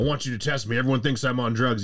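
deflated, pleading man's tone. Retelling a bodybuilder asking a clinic to test him: imitating C G Fletcher. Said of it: "He's like".

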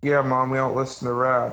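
ordinary delivery

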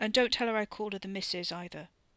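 ordinary delivery

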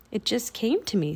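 ordinary delivery

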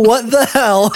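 frustrated, high-pitched, screamed exclamation. Retelling how a frustrated woman who couldn't find something reacted, retelling a scream. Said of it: "And just screams".

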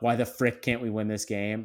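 ordinary talk

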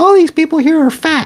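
put-on very high little kid voice. Retelling what a kid dressed as a Pokemon trainer said, in his little speaker voice. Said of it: "And his little speaker voice".

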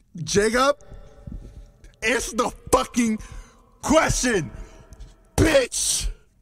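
high, crude, pushy, demanding outburst. Pressing another speaker to answer the question: very loud yelling. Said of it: "I'm sorry if this is very loud".

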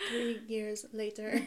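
cartoon narrator voice, title-card style. Joking that the wait will be long, in a SpongeBob voice. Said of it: "insert SpongeBob voice".

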